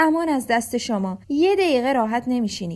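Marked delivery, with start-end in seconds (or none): none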